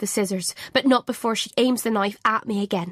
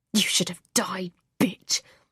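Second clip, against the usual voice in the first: sharp, hissed delivery; 2 semitones lower, 3 dB quieter than usual. Pulling the narrator down on the stairs, she speaks into the narrator's ear, hissing. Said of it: "she hisses into my ear".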